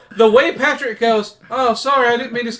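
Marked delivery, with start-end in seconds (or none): 1.5-2.6 earnest, sincere tone, truly meant. Discussing a cartoon scene, quoting Patrick's apology in an earnest Patrick impression. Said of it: "the way he apologizes sounds so sincere".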